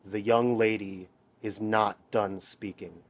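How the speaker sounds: quietly menacing, soft threatening tone. Hector steps in front of a shrieking man to cut him off, quiet menacing tone. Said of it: "in a very quiet but menacing tone just says".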